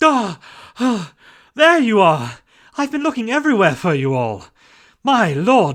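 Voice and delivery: winded, panting, catching breath between words. Finally finding the others in the castle after searching everywhere, out of breath. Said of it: "Why are you out of breath?".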